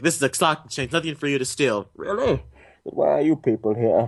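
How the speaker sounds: muffled voice spoken through a cupped hand. Quoting villain lines from the movie: Bane voice. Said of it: "when you do the Bane voice".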